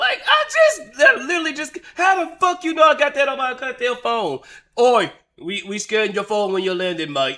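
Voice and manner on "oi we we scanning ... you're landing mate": put-on British accent with police officer tone. Imitating a uk officer stopping a traveller at the border: imitating a uk officer. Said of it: "in the U K and then get arrested".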